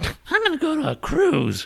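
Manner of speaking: very high, swooping, slow, drawn-out sing-song. Mocking Emma, who may not be self-isolating: imitating Emma. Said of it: "Now I'm sounding like you, sounding like her".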